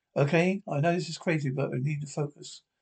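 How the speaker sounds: ordinary delivery, nothing marked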